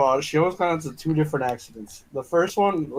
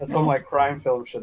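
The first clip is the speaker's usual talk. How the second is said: ordinary talk, nothing marked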